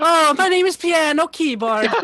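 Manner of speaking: loud, high, laid-on put-on Irish accent. On a livestream, introducing a character suggested by chat, in an Irish accent. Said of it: "it's not a stream unless we do an Irish accent".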